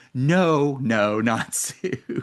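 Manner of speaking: put-on very slow, drawn-out sobbing. Retelling crying out loud in an empty theater: retelling own crying out loud. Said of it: "and I'm crying, like, out loud".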